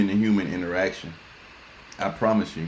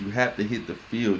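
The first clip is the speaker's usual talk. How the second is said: normal talking voice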